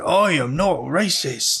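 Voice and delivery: put-on Scottish accent. Quoting a movie line while discussing the movie with others, in a Scottish accent. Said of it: "British all of a sudden".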